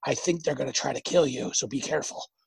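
imitated whisper. Speaker recounting what a little gnomish friend whispered to them, retelling a whisper. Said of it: "but then also whispering to me".

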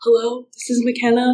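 voice cracking. Recalling answering a phone call with mom and dad alongside, imitating a cracking voice. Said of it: "And my voice was cracking".

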